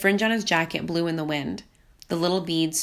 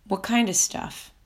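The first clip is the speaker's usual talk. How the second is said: lowered, hushed, low and quiet voice; 3 semitones higher than usual. A narrator questions a suspicious visitor, speaking in a lowered voice. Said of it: "I found myself lowering my voice".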